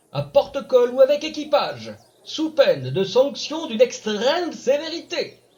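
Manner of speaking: pompous, loud, high, quavering, trembling town-crier voice. A town crier proclaims a royal decree to the village: quavering town-crier proclamation. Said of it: "Il était fier comme un paon de bénéficier du droit de criage, / sa fonction le grandissait, lui que la nature n'avait pourtant pas fait pousser bien haut. / [name] arrive dans ce village situé à quelq".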